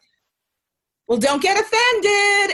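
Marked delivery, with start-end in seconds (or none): 1.1-2.5 slow, high-pitched yelling. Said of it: "yells at me and is like".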